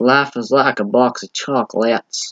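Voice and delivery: slow, unhurried, drawn-out film character voice. Quoting a line he heard, admitting the attempt isn't great: Forrest Gump impression. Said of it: "my impression isn't even that good".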